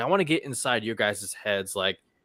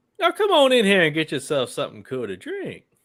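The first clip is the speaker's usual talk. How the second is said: pitched up, bouncy delivery; 7 semitones higher, 5 dB louder than usual. In a pop quiz, say a movie line for others to guess, sounding like Eddie Murphy. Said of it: "It sounds like Eddie Murphy".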